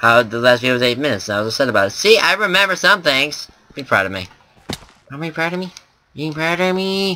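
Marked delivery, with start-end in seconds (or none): 3.7-7.2 high, silly, irritating put-on voice. Video host talking to viewers, in an annoying voice. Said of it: "that annoying voice is back".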